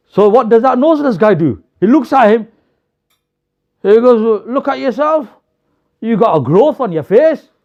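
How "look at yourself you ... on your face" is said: mock laughing jeer through the words. Voicing a noseless person in a story answering the visitor: laughing while mocking. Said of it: "And he starts laughing at him".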